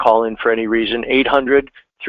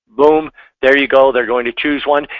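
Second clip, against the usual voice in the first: ordinary talk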